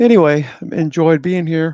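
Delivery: spoken while yawning. Wrapping up, the speaker speaks through a yawn. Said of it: "excuse me for yawning in your ear".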